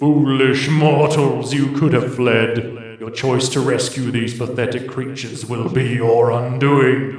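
very low, deep, rolling rumbling voice. Game narrator voicing captors taunting the would-be rescuers, in deep rumbling voices. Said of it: "Deep rumbling voices".

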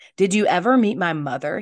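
words bursting out abruptly, blurted. Eragon suddenly asks Braum about his mother, blurted out. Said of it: "He blurted".

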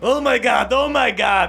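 panicked dwarf voices.

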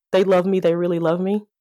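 plain

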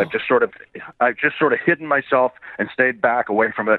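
plain

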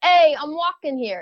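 put-on Brooklyn accent. Asked by the other speaker to do a brooklyn accent, giving it a try: brooklyn accent. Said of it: "Give me your best Brooklyn accent".

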